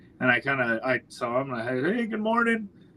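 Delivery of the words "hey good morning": high-pitched sarcastic holler. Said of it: "sarcastically hollered".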